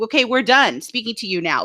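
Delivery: ordinary delivery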